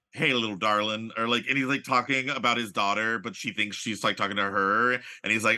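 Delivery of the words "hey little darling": sleazy, lecherous cowboy businessman tycoon voice. Describing a favorite minor movie character, in a sleazy oil tycoon voice. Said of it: "I love a sleazy oil tycoon type character".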